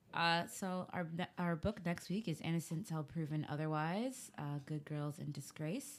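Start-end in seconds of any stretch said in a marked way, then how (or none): 1.3-6.0 soft, sultry, seductive sexy voice. Talking to the others, who then ask about the voice; sexy voice. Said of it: "what's that a sexy voice you doing".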